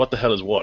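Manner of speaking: ordinary talk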